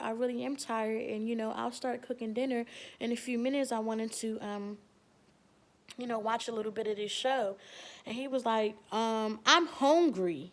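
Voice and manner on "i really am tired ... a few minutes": ordinary talk, nothing marked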